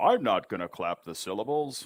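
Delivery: plain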